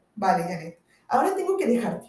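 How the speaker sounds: ordinary delivery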